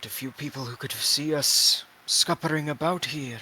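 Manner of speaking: hushed aside, muttered under the breath. Voicing a character who shoots a look at Artur: muttering under his breath. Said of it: "under his breath, he goes".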